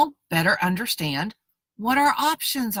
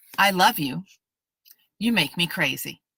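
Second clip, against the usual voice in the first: clean break after "I love you"; 3 semitones lower than usual. Demonstrating ending a phrase with a period: clear pause after "I love you". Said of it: "simply pause, stick a period at the end of that phrase".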